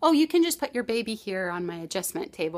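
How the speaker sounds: ordinary talk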